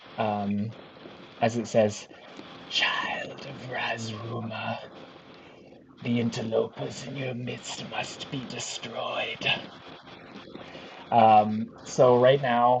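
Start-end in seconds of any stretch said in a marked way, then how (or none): 2.7-9.5 breathy, invasive-sounding whisper. Voicing an invasive presence that speaks inside a character's head: invading presence speaking in the mind. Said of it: "you hear this voice enter your head".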